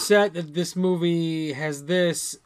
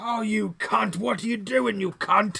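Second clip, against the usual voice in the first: put-on high-pitched old British character voice; 5 semitones higher than usual. Quoting a line from an old british tank robot character: imitating a british old tank character. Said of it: "it's the one British old, like, tank guy".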